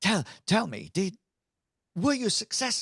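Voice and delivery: eager, thrilled, very high-pitched and loud. Voicing the leader greeting the returning party: excited. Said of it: "gets really excited and says".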